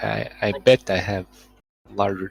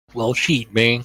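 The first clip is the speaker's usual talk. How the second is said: fake American accent, louder; 6 dB louder than usual. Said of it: "You're trying to do an American accent".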